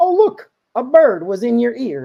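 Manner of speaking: loud, high-pitched New York voice. Performing a comedy bit where the guy answers, in a new york guy accent. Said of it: "And I do this like New York guy".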